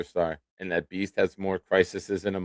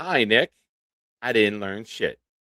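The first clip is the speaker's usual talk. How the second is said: slow, cheeky, sassy delivery; 3 semitones higher, 3 dB louder than usual. Reading out a message on a show: sassy attitude. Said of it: "I said that with a little sassy attitude".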